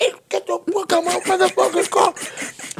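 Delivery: mock enraged shriek, pitched very high. Recalling a woman jumping into the driver's seat of their car, retelling a scream. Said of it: "I'm screaming".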